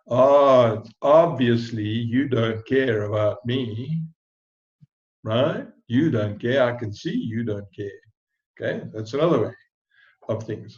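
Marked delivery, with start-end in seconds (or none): 0.1-8.0 mocking, needling sarcasm with a drawn-out "oh". Demonstrating different ways of speaking to someone, now in a sarcastic way. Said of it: "some kind of sarcastic way".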